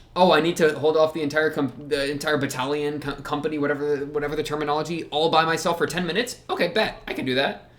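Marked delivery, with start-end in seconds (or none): none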